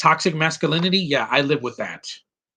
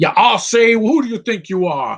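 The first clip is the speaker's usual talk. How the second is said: put-on exaggerated Southern voice, higher and louder; 7 semitones higher, 5 dB louder than usual. Mocking how some actors do southern accents: Foghorn Leghorn voice. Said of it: "like Foghorn Leghorn".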